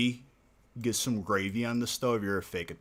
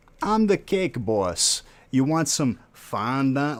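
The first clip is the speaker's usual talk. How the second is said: booming, slow, drawn-out fake Italian accent; 5 semitones higher, 9 dB louder than usual. Ranting about the Cake Boss, mocking him: Cake Boss impression. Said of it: "That dude is the fakest Italian".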